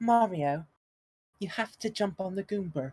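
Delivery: put-on British accent. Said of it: "why is he British?".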